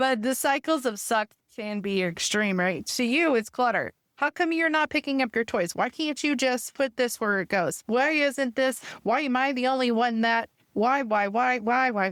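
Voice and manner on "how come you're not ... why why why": mock repetitive, harping parental nagging. Acting out a parent asking about toys left out: imitating a nagging parent. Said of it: "It sounds like nagging to them".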